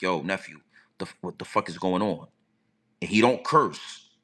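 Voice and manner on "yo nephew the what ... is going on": mock cool, calm tone, lower and quieter. Retelling a phone call, the speaker quotes his uncle: imitating uncle's calm voice.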